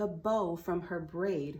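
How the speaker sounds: ordinary delivery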